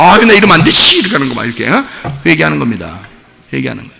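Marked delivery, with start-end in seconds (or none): 0.0-1.0 high, loud startled cry, remorseful. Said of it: "막 깜짝 놀라서".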